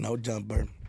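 quiet, low-pitched delivery.

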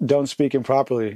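plain

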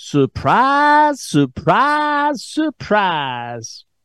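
phony Southern accent, high and swooping. A radio host repeats his opening words in a phony Southern accent like Gomer Pyle. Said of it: "in my phony Southern accent, like Gomer Pyle".

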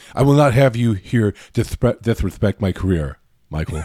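robotic machine voice of a security-bot. Acting out what a robot says to someone, in a robot voice. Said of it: "That's the actual robot voice".

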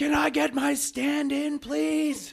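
very high, very slow, top-of-lungs yell. Telling a story about an extra on set, retelling a shout at full volume. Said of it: "at the top of his lungs".

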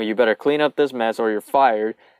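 ordinary talk

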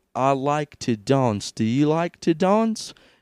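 slow, drawn-out put-on British accent. Describing a man on a date; putting on a british accent. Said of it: "So then why are you British now?".

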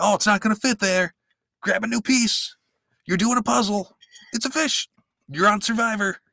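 very high, shrill, loud yell. Retelling a puzzle challenge, imitating a contestant yelling from the sidelines. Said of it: "he yells out".

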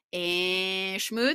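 nasal, nasally voice.

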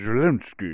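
Russian accent in an odd voice.

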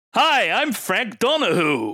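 fake American accent, very slow and high. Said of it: "trying to sound American when I'm saying his name".

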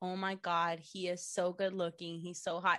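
ordinary talk, nothing marked

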